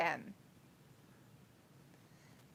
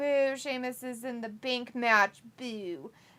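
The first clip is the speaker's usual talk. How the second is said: ordinary talk, nothing marked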